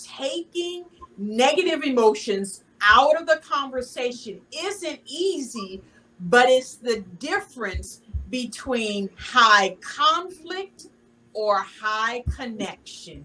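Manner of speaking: slow, careful, measured, deliberate phrasing. Quoting a guest's earlier words back to them: speaking slowly. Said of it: "I'm gonna say this slow".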